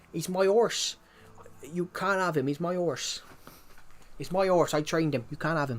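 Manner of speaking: Devon accent throughout. Showing listeners what the Devon accent sounds like, Devon accent. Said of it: "that's pretty much that's the accent".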